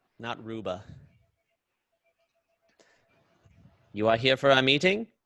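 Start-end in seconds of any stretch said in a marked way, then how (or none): 3.9-5.1 loud, swooping put-on creature voice. Voicing a frog-like receptionist creature greeting guests at the door: put-on receptionist creature voice. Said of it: "I just don't remember what voice I gave her last time".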